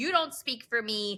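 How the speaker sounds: usual speaking voice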